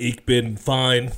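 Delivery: loud, mechanical, put-on German robot voice. Asked how he is by the comedy podcast host, the co-host answers in German robot voice. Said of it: "That was like my German robot".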